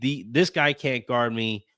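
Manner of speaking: plain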